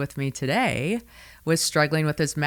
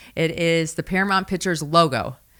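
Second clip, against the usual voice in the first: ordinary delivery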